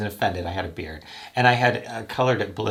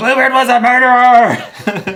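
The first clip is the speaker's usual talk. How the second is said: very loud, very high, shrill, drawn-out yell; 14 dB louder than usual. Recounting a woman yelling after him as he walked away; retelling her yelling. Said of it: "she's yelling".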